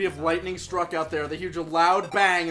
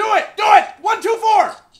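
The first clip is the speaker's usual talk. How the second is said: loud yelling, shouting; 9 dB louder than usual. Urging teammates to cut the wires during a game: yelling. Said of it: "Stop yelling at me!".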